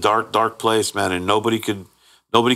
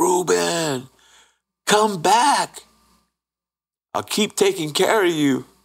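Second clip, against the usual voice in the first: desperate, high-pitched screaming; 8 semitones higher than usual. Speaker recounts his wife's reaction when he passed, imitating a screamed plea. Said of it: "my wife screams".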